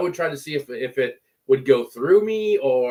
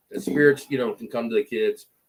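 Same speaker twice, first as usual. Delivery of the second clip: ordinary talk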